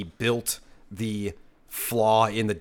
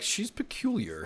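bad, prim robot voice, very high; 11 semitones higher, 6 dB quieter than usual. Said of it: "three P O would be like".

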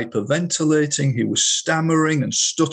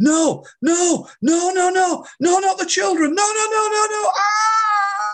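put-on very high, drawn-out, wailing scream. Retelling a hypnosis subject in trance, writhing: imitating screaming at the top of voice. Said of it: "scream at the top of his voice".

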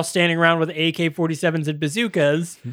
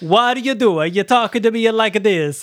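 badly done, terrible, fake put-on Italian accent; 4 semitones higher than usual. Retelling how the house leader in a film talked, Chico Marx-style fake Italian accent. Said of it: "sounds like Chico Marx".

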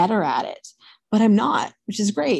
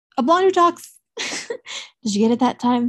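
ordinary talk, nothing marked

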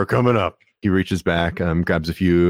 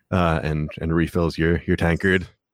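ordinary talk, nothing marked

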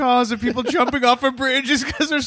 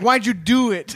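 ordinary talk

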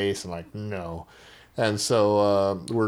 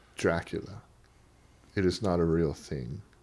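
put-on dry, pragmatic, deadpan voice; 4 semitones lower, 6 dB quieter than usual. Retelling what a man from the region said, imitating his dry voice. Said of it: "have this very pragmatic like dry voice".

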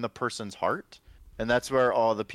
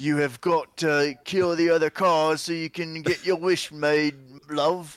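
higher, louder put-on British accent. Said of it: "Why are they British?".

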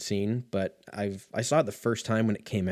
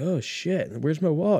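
put-on high-pitched drunk-guy voice; 7 semitones higher than usual. Acting out a drunk guy at a bar who dropped his wallet: imitating a drunk guy. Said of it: "like a drunk guy at fucking".

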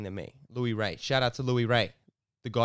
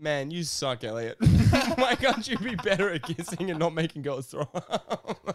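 put-on acted-out, tipsy, high-pitched drunken voice; 6 semitones higher, 3 dB louder than usual. Retelling a night he got a girl to throw up, voicing himself: imitating his drunk self-talk. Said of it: "I'm sitting there drunk going".

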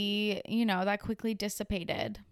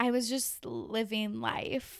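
slow, creaky, drawn-out vocal-fry drawl; 4 dB quieter than usual. Chatting about celebrities, doing a Kourtney Kardashian vocal fry impression. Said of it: "I'm gonna do my best Kourtney Kardashian impression here".

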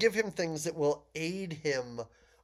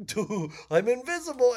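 put-on high, loud, dopey dumb-kid voice; 7 semitones higher, 5 dB louder than usual. Describing the hero leaving with the hat: imitating an idiot kid. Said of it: "like an idiot kid who's like".

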